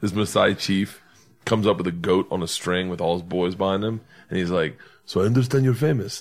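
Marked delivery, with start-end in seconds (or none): 5.0-6.2 fake French accent, bad and off target. Retelling what a Maasai chief said on meeting him, bad French accent. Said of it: "that's French".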